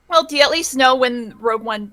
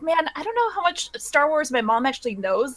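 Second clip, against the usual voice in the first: plain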